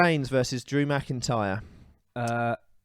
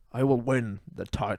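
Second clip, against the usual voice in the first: bad put-on Scottish accent. Told to do your best Drew McIntyre, give a bad Drew McIntyre impression. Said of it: "Do your best, Drew McIntyre".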